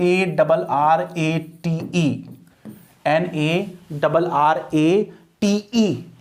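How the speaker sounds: slow, letter-by-letter spelling. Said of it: "जैसे मैंने कहा एन".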